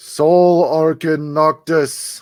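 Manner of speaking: resounding voice. Game narrator voices a voice the party hears calling a name, booming voice. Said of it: "You all hear a booming voice".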